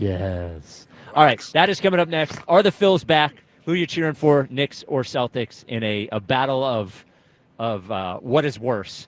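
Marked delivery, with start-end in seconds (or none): 0.0-0.9 deep, low sultry voice, lower and quieter. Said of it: "get nice and deep".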